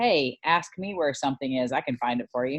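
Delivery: ordinary delivery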